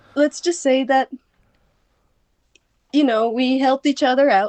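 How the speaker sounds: voice cracking and breaking, pitch rising. Answering a question about what happened next: voice breaking. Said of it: "my voice is breaking".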